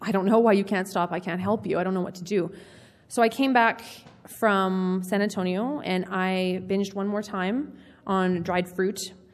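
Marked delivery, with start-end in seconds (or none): 0.0-2.5 put-on crying, faster. Retelling her mom's reply on a phone call, imitating mom crying.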